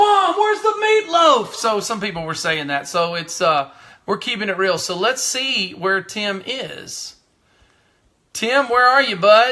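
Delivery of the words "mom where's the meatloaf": very high, loud yell. Comparing own yell to Will Ferrell calling for meatloaf: Will Ferrell yelling for mom. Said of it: "kinda like Will Ferrell when he was like".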